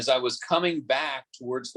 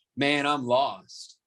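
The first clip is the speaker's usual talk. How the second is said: put-on fed up, exasperated, at-a-loss tone. Retelling what a lost driver said after pulling up: imitating an exasperated driver. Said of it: "kind of exasperated".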